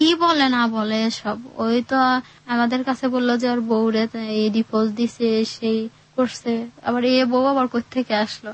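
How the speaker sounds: normal talking voice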